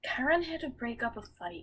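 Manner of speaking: not shouting, soft. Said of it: "That was not shouting".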